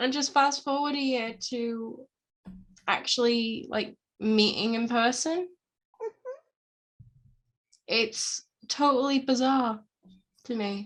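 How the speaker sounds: trying not to cry, holding back tears. Talking with a co-speaker about finally meeting in person, fighting back tears. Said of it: "I'm really trying not to cry right now".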